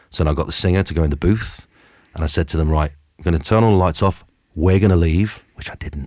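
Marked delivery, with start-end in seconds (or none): none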